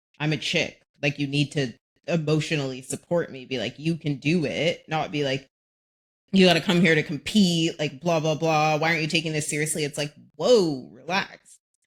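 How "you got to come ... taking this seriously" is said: normal talking voice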